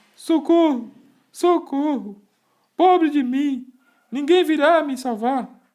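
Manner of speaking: very high, very loud tearful sobbing shouts. Reading a story aloud, a puppet trapped inside a sea monster: crying and shouting for help. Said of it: "começou a chorar e gritar, e chorando dizia".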